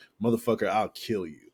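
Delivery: ordinary delivery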